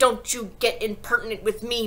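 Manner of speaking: curt, sharp, cutting, snapping voice. The headmistress answers a teacher's challenge to her, snapped. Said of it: "The trunchbull snapped".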